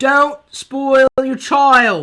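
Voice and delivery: horrible, booming put-on British accent. Imitating what Cyber Nanny says: Cyber Nanny British accent. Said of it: "she's got that British accent".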